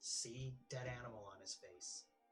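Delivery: whispered character voice. Whispering in character to a companion about the man's face: whispering in character. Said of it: "So I'm gonna go ahead and whisper to Tybalt".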